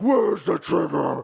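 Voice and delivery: cartoonish, rough, gruff growl, high and very loud. Discussing Bale's Batman voice in later films, speaker quotes it: cartoonish Batman voice. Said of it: "kept on using that voice and it just sounded more cartoonish".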